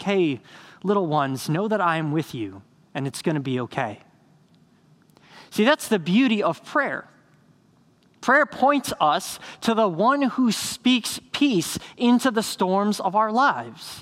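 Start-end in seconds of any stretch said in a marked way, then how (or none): 0.0-4.0 mild, kindly, gentle reassuring tone. Voicing Jesus reassuring his frightened disciples: imitating Jesus gently. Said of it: "he said that as a gentle reminder".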